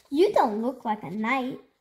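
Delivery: ordinary delivery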